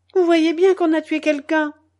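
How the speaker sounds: put-on bursting old woman outcry, loud and high. Narrator reads an old woman reacting to news of the tsar's murder, exclaimed. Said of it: "s'exclama la vieille".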